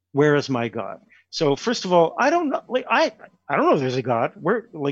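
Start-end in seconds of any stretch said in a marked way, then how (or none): none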